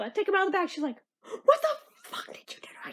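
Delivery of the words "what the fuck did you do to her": put-on livid, furious voice. Retelling how mom reacted to wet sandals: imitating mom livid. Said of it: "she was, like, livid".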